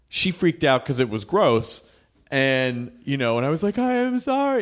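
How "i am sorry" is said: very high, frantic, hyperactive over-apologizing. Recounting a nosebleed on her, retelling his hyperactive apology. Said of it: "hyperactive apology guy".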